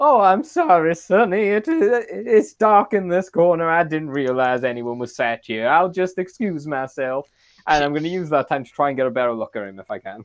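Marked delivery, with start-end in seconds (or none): 0.0-7.3 put-on polite elderly voice, raised, slow and drawn out. Pretending to be old while sitting down beside a man, in an old person voice. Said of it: "pretending like I can't see too good because I'm old".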